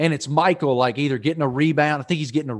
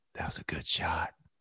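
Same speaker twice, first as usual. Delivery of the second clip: hushed, whispered golf announcer voice; 9 semitones lower, 15 dB quieter than usual. A host repeating a line to show off his golf voice. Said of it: "And I was in my golf voice too".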